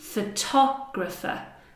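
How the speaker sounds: photographer said with the syllable tog stressed. Comparing photo, photograph and photographer: stress on tog in photographer. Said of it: "I'm actually stressing the sounds, not the first sound".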